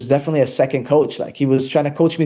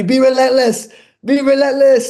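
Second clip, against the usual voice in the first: put-on high-pitched, loud screaming; 11 semitones higher, 5 dB louder than usual. A fighter recalls his corner man coaching him during the fight, retelling his screaming. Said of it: "he's screaming at me".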